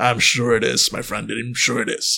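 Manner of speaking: put-on low, hushed troll voice. In a roleplay scene, answering another character: troll voice. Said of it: "different voice. This is a troll".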